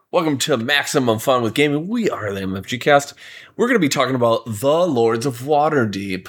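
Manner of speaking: put-on broadcast-style radio announcer voice. Podcast host opening the show, in a radio announcer voice. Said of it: "Now that was like a radio voice".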